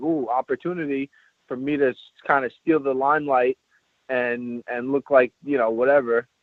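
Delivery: plain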